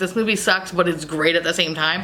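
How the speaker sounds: normal talking voice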